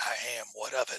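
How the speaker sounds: deep, raspy tavern-keeper voice, low pitch. Playing the owner of an establishment answering a visitor, deep raspy voice. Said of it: "She has a real deep voice, raspy".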